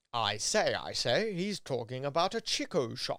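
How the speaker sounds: put-on English accent, tried on. Retrying the accent after the listener says it sounds New Zealand, attempted English accent. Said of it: "Is that better?".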